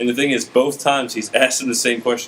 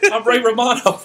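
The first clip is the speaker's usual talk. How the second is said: high, laughing put-on impression voice. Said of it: "clearly Ray Romano and ended as Bill Burr".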